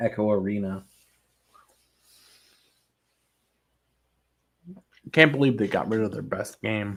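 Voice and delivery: speaking with food in mouth. Speaker recalling a vr game that was shut down, talking while eating. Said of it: "Sorry, I'm eating".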